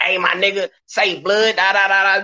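hoarse, gravelly put-on voice. Retelling hearing a friend through the walls in lockup, imitating G-Ray's raspy voice. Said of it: "He got that rasp in his voice".

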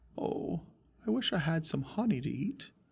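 soft, high, put-on British accent. Asked to do a Pooh impression, the speaker gives it another try: Pooh impression, mock British accent. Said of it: "You sound like a British guy with a honey fetish".

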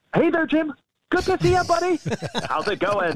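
put-on celebrity voice, pitch pushed very high. Performing for him to his face, doing a Jim Carrey impression. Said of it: "So I got to do my Jim Carrey".

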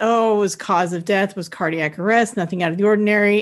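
ordinary talk

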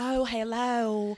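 put-on Southern accent. Mimicking how Teresa talks, greeting in Teresa's weird Southern accent. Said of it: "uses this weird Southern accent".

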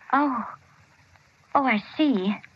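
sounding not very happy. A mother answers her son's news that he was discharged, not very happy. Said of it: "You don't sound very happy about it".

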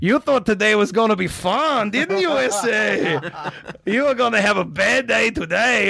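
heavy cartel-movie villain voice. Speaker retelling being slapped in a chair by somebody, in a cartel-movie voice. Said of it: "this voice straight out of a cartel movie that's going".

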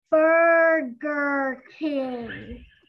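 very slow, loud, clear, carefully spelled out. Telling a joke, the puzzled counter man answers very slowly and clearly. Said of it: "very slowly and clearly".

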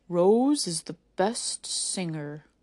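low, deep, slow, drawn-out pronouncement. Reading a story aloud, voicing a talking rock: deep voice. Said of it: "May May heard a deep voice say".

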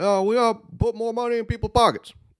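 very high, lifted politician-style stump-speech inflection. Imitating a politician's speaking style with finger gestures: Obama impression. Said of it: "he has the inflection like Obama did".

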